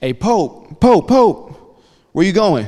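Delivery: high, drawn-out hollering yell. Retelling how a teammate called after him: imitating someone yelling. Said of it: "he starts yelling at me".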